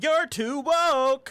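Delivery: shrill, high, loud cartoon voice shriek. Picturing a cartoon hedgehog saying a line: Sonic the Hedgehog voice. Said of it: "Sonic the Hedgehog saying".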